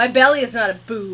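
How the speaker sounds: scolding tone, loud.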